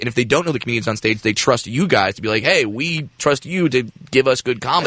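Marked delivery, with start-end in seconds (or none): none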